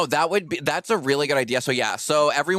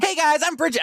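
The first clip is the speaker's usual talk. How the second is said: very high-pitched vlogger voice; 13 semitones higher than usual. Showing how a video parody of the other speaker would go: imitating Bridget. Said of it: "my impersonation of you".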